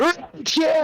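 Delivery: shrill, very high screeching goblin voice. Retelling fans coming to them in the server, imitating fans screeching like goblins. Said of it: "screeching like goblins".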